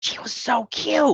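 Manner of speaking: very high-pitched, hushed whisper. Retelling a man whispering to his buddies behind her, imitating a whisper. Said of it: "he's whispering to like his buddies".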